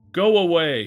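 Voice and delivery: full-throated, shrill shriek, very loud. Screaming again at an old man. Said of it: "Alfredo screamed again".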